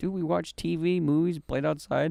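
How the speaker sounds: ordinary talk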